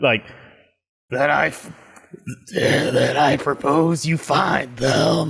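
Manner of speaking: put-on, slow crocodile character voice. Urged by the others to do the voice, the speaker performs a crocodile voice. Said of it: "do another crocodile voice".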